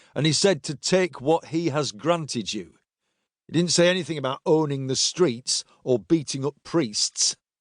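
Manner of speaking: ordinary talk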